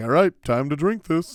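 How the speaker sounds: casual, relaxed, friendly buddy-like voice. Describing a friend who can chug really fast: imitating a friend's voice. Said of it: "He sounds like that".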